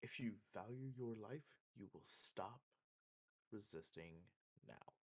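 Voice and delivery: hushed, menacing, barely voiced whisper. Max warns a struggling captive he holds with a hand over his mouth: whisper. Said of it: "Max is going to whisper".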